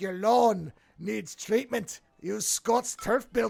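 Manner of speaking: put-on slow, rugged, full tough-guy Scottish accent. Describing a lawn commercial, the speaker does its tough guy's Scotts commercial Scottish accent. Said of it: "he's doing the whole accent and everything".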